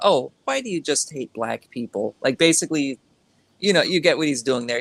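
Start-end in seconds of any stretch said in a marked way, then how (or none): 0.0-2.1 swooping, sing-song, mock smart-ass sarcastic tone. Retelling what a man said like a smart ass: imitating a sarcastic tone. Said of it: "sarcastically implying that this isn't the case".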